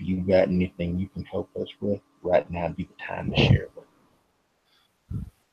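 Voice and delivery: hushed half-whisper under the breath. Voicing Jackie, who half-whispers to the broken woman at his feet: half-whispering. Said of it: "Jackie whispers to".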